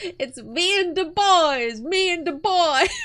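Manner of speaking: put-on very high, very loud, drawn-out children's yelling. Retelling how the kids kept repeating a phrase through dinner: imitating kids yelling. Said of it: "all through dinner kept yelling".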